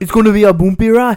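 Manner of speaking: put-on very loud, high Jamaican accent. Quoting a character's line to friends, in a Jamaican accent. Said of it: "Your Jamaican accent's pretty good".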